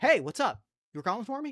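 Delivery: a little confused. Voicing a character who walks up after being called: a little confused. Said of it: "walks up a little confused and goes like".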